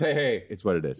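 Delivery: making-do, it-is-what-it-is attitude. Mocking what another speaker would say afterwards about the hair: imitating Mongo. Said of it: "That's what he says afterwards".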